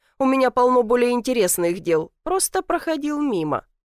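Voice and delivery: plain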